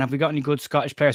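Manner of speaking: normal talking voice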